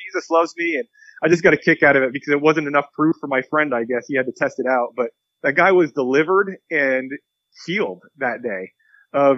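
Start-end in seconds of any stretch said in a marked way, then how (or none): 0.0-0.8 put-on, very high shouted call. Retelling a man answering a hearing test: imitating a yell. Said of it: "the guy would yell out".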